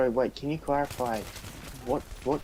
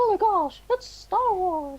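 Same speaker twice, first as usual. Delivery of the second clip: voice raised very high and bright; 5 dB louder than usual. Urged by the other speaker to give it a go, the speaker does a Mickey Mouse voice. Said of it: "you're the one that can do the impression".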